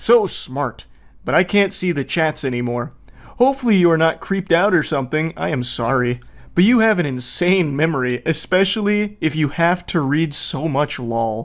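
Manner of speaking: normal talking voice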